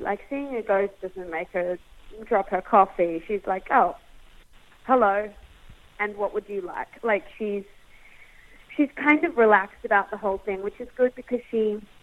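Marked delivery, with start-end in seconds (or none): none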